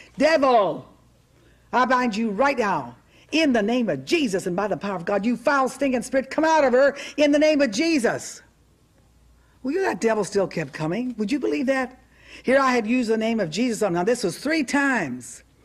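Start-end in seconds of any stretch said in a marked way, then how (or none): 0.2-8.4 mock commanding, rebuking, forceful voice. Retelling repeating the command to the devil: retelling a louder command. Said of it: "So I said a little louder".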